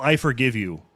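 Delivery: flat, expressionless tone. Retelling the reply given to people who apologize over nothing: imitating own deadpan delivery.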